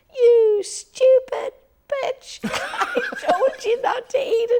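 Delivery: tiny little voice, very high and loud. Retelling what a little voice from the stall said after the speaker fell; little voice. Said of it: "this little voice from the stall goes".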